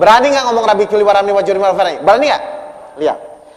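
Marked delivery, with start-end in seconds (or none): 0.7-2.0 very fast, rushed, rattled-off delivery. Talk on prayer, showing someone praying too quickly: rushed, very fast. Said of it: "ngomongnya cepat-cepat".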